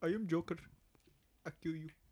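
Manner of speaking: bad fake Indian accent. Trying, as a joke, the accent just mentioned: bad put-on Indian accent. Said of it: "I can't even do it".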